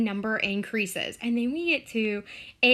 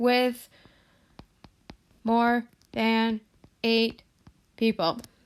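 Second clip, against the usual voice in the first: machine-like robotic voice, slower. Teacher working through a household frequency problem with the class, robotic, computer-like voice. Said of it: "and I sound like a computer".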